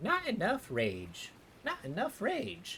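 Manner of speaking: very high, squeaky, swooping game-character voice. Speaker recalling their first World of Warcraft character, Gnome Warrior voice. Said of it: "I used to play a Gnome Warrior".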